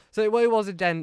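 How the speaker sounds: normal talking voice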